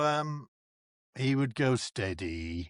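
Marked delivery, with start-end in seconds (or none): 1.8-2.7 low, soft voice dropped down.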